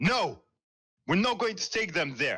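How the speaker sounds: high-pitched, near shouting. Captain Dane speaks from behind the closed navigation room door in a loud raised voice. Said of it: "speaking in very um, loud, raised voice".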